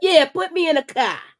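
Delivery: put-on high-pitched Boston accent on the word "car". Acting out a man agreeing to come to new york for an interview, in a boston accent. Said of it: "that was a Boston accent".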